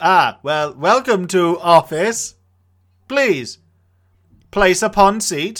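mechanical, broken robotic speech. Greeting a job applicant in a comedy sketch: robotic way of speaking. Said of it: "are you one of these new Tesco robots?".

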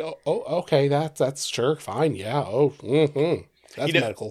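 sarcastic, slow, halting, feigned acceptance. Retelling their own earlier reply to the others: imitating own sarcastic reply. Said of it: "that was being sarcasm".

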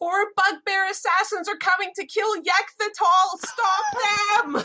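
full-throated, loud, high-pitched shout. A player's character shouts down the hall as loud as she can: shouting as loud as possible. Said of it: "shout down the hall as loud as she can".

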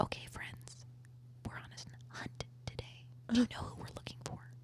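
very soft, hushed, very quiet whisper. Recalling how they talked to their class about a hunt, whisper voice. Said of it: "talk in a whisper voice like this".

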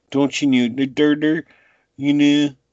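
put-on overdone Pennsylvania accent. Complaining that they go too hard on the accent, imitating it in an exaggerated Pennsylvania accent. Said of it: "they go a little too hard on the accent".

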